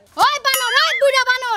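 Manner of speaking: loud, furious, angry yelling.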